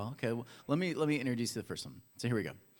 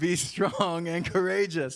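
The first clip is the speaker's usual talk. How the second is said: very slow, very drawn-out, fake Russian accent; 5 semitones higher, 8 dB louder than usual. Trying an accent on a phrase just discussed, in a put-on russian accent. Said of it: "it's always Russian".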